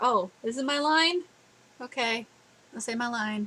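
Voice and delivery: bored, disinterested, going-through-the-motions delivery. Imitating the awful English dub actors: imitating disinterested voice actors. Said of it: "Those actors just sound so disinterested".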